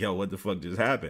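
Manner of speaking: normal talking voice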